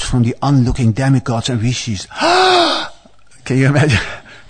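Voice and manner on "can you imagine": sharp gasp of alarm. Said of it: "a great cry of alarm arose".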